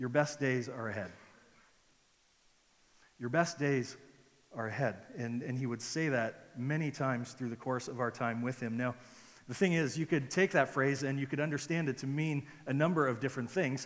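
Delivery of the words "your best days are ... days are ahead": very gentle, very calm, reassuring tone. Retelling how a mentor encouraged discouraged planters: imitating a gentle, calm voice. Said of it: "in a very gentle, very calm way".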